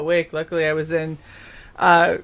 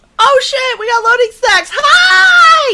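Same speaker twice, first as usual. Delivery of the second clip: very loud, very high, thrilled, excited shouting; 9 dB louder than usual. Spotting new arrivals in the chat: excited shouting. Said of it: "Sorry, I get excited".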